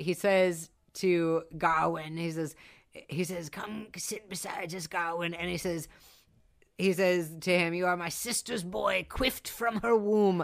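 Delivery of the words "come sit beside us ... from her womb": put-on creaky old man voice, faster. Retelling a scene where a character speaks to Gawain: creaky old voice. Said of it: "speaks in this like creaky old voice".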